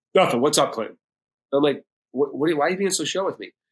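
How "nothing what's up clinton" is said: put-on angry, mad tone. Retelling a phone call, the speaker quotes his dad, imitating dad's mad tone. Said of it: "that's my dad's mad tone".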